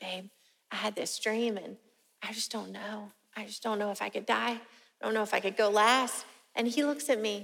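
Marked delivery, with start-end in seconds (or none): 0.0-6.3 soft, exposed, vulnerable, tender tone. Retelling own words to him about a dream: imitating a vulnerable, tender tone. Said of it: "all vulnerable, tender".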